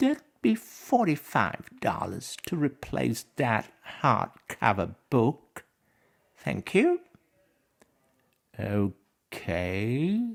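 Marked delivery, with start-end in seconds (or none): 0.0-7.0 put-on mean, higher-pitched sing-song voice. Retelling what the librarian said about a written-in book: imitating the librarian's meanest voice. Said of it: "she says in her meanest voice".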